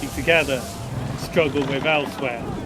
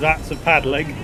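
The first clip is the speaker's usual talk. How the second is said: ordinary delivery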